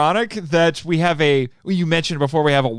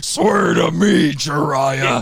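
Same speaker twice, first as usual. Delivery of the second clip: gruff, growling voice; 2 semitones lower than usual.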